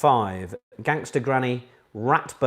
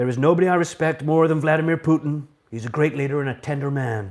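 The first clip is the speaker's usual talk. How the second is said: put-on Jamaican accent; 3 semitones higher, 4 dB louder than usual. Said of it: "it is a good Jamaican accent".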